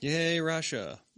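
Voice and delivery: insincere, ironic, sarcastic little cheer. Reacting to news of a detained athlete: sarcastic cheer. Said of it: "I'm being sarcastic".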